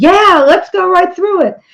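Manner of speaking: high, shouted yell from a group of voices. Retelling a rafting trip, quoting the other rafters: imitating people yelling. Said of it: "everybody except me was yelling".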